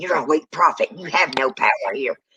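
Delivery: put-on voice, words snarled out. Retelling how a boy kept looking at the praying brother, retelling a snarl. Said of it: "snarling and saying".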